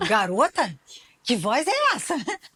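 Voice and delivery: high, loud, amazed exclamation.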